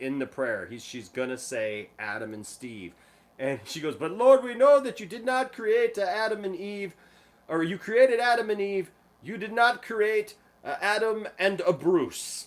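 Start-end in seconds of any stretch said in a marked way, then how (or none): 4.0-12.5 put-on old lady's European accent, high and loud. Retelling an old lady's prayer at a gathering, imitating her European accent. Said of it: "this accent".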